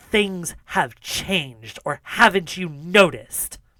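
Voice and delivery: angry, hissed voice. Voicing the general scolding a soldier about a captain: hissing angry general. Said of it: "steps in and hisses at her".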